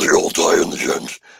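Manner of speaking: put-on creepy, rough, creaky demonic child voice. Retelling what a little sister said after a film: imitating a demonic child's voice. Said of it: "like the demon thing".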